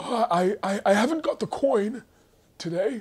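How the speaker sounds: put-on very high, deathbed-weak, dying old wizard voice. Acting out two old wizards settling a debt: old wizard on his deathbed voice. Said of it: "They both sound like they're on their deathbed".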